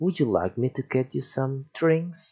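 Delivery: pitch rising like a question on "drinks". Teaching english question intonation, rise on drinks. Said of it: "naik juga ya".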